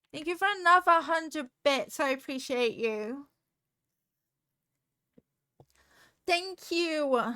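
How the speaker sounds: shouting in a thankful tone. Thanking a viewer for donated bits on stream, yelling. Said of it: "I'm yelling".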